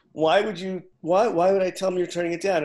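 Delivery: loud, utterly bewildered disbelief, acted out. Retelling the agent's reply on hearing the offer turned down: imitating a confused agent.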